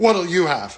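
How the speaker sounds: acted-out scornful, sneering delivery.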